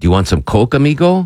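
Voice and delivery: put-on mimicked Peruvian accent. Retelling a street seller offering something: imitating a Peruvian accent. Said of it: "Peruvian accent".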